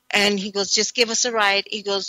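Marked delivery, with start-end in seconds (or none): none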